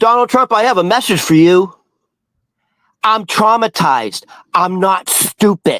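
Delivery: mock-calm forceful delivery. Retelling a message a woman gave to a man, imitating calm, powerful delivery. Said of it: "she said it so calmly".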